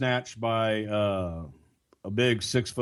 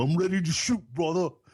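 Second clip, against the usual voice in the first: mocking, pitched-up yell; 7 semitones higher than usual. Retelling how a wrestler stood in the crowd: mocking Taz impression. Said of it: "you just said that in a mocking way".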